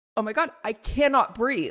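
ordinary talk, nothing marked

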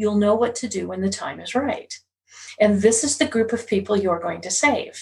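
ordinary talk, nothing marked

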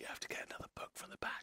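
hushed, quiet, whispered aside. The person in front of the player leans back and whispers to them, whispering. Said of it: "He whispers to you".

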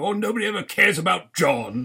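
put-on silly, high, complaining comic voice with British accent. Speaker quotes a complaining character from a show, Monty Python voice. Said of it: "I'm slipping into a Monty Python voice here now".

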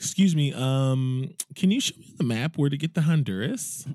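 naive, clueless tourist voice with a drawn-out um.

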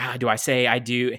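put-on panicked, freaking-out voice. Retelling a wedding scene where the groom's father panics: imitating a panicked freak-out. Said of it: "he has the freak out".

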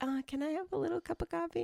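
very high, timid, mousy little voice. The speaker retells how they once made a request, in a put-on mousy voice. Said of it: "I said it in that mousy way".

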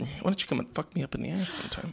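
rough, raspy, creaky film-star voice. Quoting a Drag Race reference in a Mae West impression. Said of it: "Mae West".

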